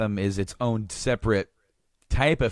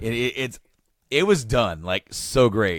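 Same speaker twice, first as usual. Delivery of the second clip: usual speaking voice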